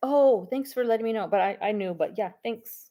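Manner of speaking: polite tone. Showing a polite reply to a reminder about a test: saying it nicely. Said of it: "say it nicely".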